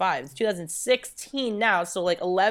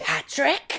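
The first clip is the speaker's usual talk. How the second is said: put-on scolding mother voice, pitched higher; 6 semitones higher than usual. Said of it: "she turned into the mom from Mommy Dearest".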